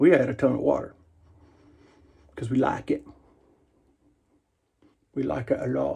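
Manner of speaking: casual, offhand put-on British accent. Talking to viewers on a Friday off work, British accent. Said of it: "I just had a British accent there".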